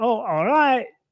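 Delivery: put-on high, easy drawling Caribbean accent. Imitating how people greeted passersby in the Caribbean: Caribbean drawl. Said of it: "they do it with that drawl".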